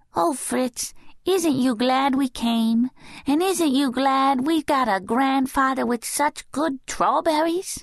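joyful, happy, tiny, very high voice. Narrator reading a little girl's line to Fritz, in the happiest little voice. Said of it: "the happiest of little voices".

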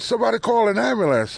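very high-pitched shouting. Speaker retells finding his niece on the ground after a car hit her: retelling a yell for help. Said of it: "I'm yelling".

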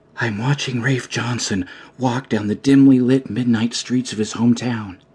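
hushed stage half-whisper. A reporter dictates into her tape recorder from an alley, half-whispering into a tape recorder. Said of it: "[name] might know her byline from the countless articles she'd written for the Beacon, available at your local grocery checkout aisle, but that would be it. He wouldn't know she'd tailed the bus throu".

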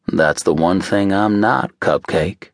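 dry, deadpan, wry tone. A man answers a woman who says even he makes mistakes, dry. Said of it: "he replied dryly".

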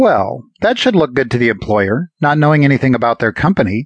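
huffy, sarcastic tone with a huff. She retorts to Alex after he admits he doesn't remember; huffy and sarcastic. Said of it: "she huffed sarcastically".

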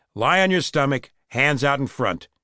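ordinary delivery, nothing marked

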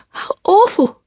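very high voice, sudden burst like a sneeze. Reading a story aloud, a girl reacting to sad news: very high voice. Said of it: "Robin said in a very high voice".

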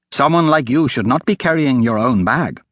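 ordinary delivery

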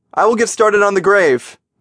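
high-pitched shouted yell. Narrator reads a man calling out as he walks off: yelling. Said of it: "Mickey yelled".

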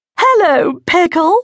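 shrill, very high shriek. Narrating a story, reading the woman's greeting to Elliot: Patricia Porshley Plum shrieking. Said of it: "shrieked in return".

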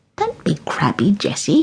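sing-song, playful, fond teasing. Granny tickles Jessie's neck and speaks to her teasingly. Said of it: "she teased".

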